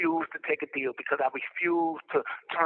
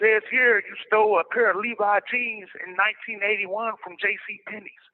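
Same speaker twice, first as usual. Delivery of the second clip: middle-aged man voice, pitched up, reading; 5 semitones higher, 3 dB louder than usual.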